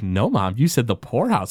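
ordinary talk, nothing marked

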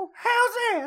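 very high, squeaky voice.

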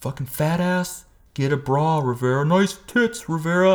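high, slow, mocking, jeering tone. Retelling a gym-class bully's taunts: imitating Ryan Henry taunting. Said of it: "the little hillbilly guy".

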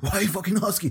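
put-on angry voice. Retelling how a business partner reacted when asked about money: imitating someone angry. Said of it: "angry with them".

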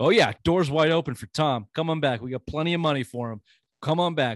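loud, backhanded, dripping with sarcasm. Retelling a coach's answer about a quarterback returning: imitating Bruce Arians sarcastically. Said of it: "it sounded kinda sarcastically like".

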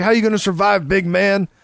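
ordinary talk

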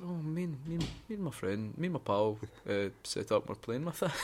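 very quiet, hushed, sheepish, faltering and stumbling. Retelling how dad explained the zip line being up: imitating sheepish dad. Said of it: "my dad was looking a bit sheepish".

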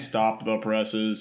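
mindless, zombie-like, zombified delivery. Retelling a show scene, quoting a character: zombified voice. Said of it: "all zombified".

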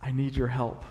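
quiet, hushed voice. Retelling asking the host and team leader for help, quiet voice. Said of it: "in a quiet voice".

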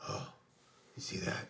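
soft, low, breathy awed whisper. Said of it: "Daryl was like".

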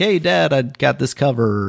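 bursting with excitement, all excited. Retelling what a man from Nigeria said to his dad, imitating an excited son. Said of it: "and he's all excited".

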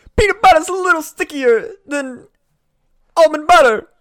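very loud, very high, shrill, shouted rocker-actor mashup voice. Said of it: "fucking witticisms from [name], but also with, like, [name]'s, like, signature weird pauses".

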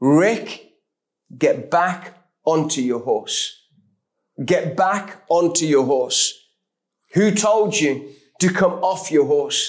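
imitated stern, direct voice. Retelling words heard from a distant voice: imitating a stern, direct voice. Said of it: "a voice so stern, so direct".

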